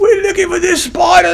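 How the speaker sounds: put-on Australian nature-host accent. Quoting the guy on a tv nature show, in an australian accent. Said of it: "the guy's got an Australian accent".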